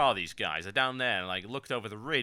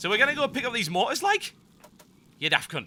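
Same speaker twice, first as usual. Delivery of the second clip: put-on Geordie accent, pitched very high; 11 semitones higher, 4 dB louder than usual. Showing viewers what a whole video might sound like, in a put-on geordie accent. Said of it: "do an entire video in a Geordie accent".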